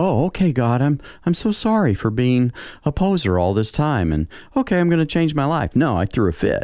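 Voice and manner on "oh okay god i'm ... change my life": high, meek, pious, mock-apologetic tone. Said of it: "and just go".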